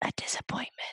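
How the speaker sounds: soft, breathy whisper, disappointed tone. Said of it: "He whispers".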